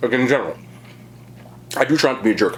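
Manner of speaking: speaking with mouth full of food. Going through a personal list of actors while eating, talking with mouth full. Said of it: "talk too much with my mouth full".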